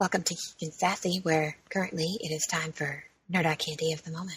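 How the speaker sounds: very quiet, low, hushed ASMR public-radio voice. Host opening a show segment in a soft asmr npr voice. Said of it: "Miranda's A S M R N P R voice".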